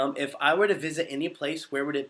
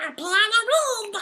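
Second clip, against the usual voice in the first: very high, loud cartoon duck voice; 6 dB louder than usual. Answering a viewer who asks for a holiday greeting: Donald Duck voice. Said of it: "can you say Happy Halloween in Donald Duck's voice".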